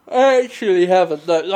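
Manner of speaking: loud reply with words stretched by a yawn. Answering a question from the other speaker, yawning while talking. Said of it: "I'm sorry I'm yawning".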